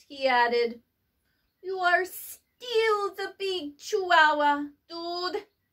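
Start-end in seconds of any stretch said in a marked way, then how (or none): 1.7-5.5 put-on Spanish-accented voice. Reading a children's story, the cat talks to his mirror in a Spanish accent. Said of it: "using his very best Spanish accent".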